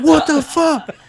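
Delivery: shrill, very high, loud scream. Retelling shots fired near the set, imitating Angelo screaming. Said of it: "I see Angelo ducking and screaming".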